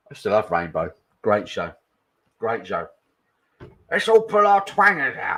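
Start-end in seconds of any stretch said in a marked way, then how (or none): 3.9-5.3 very high, loud, squeaky voice, badly done. Quoting a line from Rainbow after chat praises the Zippy impression: bad Zippy impression. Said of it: "that wasn't very good".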